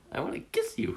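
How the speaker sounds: cutesy, sweet, cute little voice. Asked by another speaker to say what they want: cute voice. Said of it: "Say it in your cute voice".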